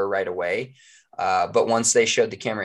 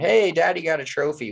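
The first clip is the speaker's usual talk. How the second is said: mock scream, high, like a cheer; 8 semitones higher than usual. Retelling what the winner's daughter shouted after the win: imitating someone screaming. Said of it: "She screamed".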